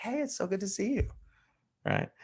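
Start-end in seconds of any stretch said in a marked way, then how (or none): 0.0-1.1 soft-spoken, easygoing, gentle tone, pitched up. The speaker demonstrates how they greet the yellows in their audience, talking softer. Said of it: "If I'm talking to yellows".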